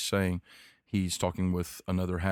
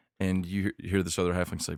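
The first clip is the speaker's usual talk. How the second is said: normal talking voice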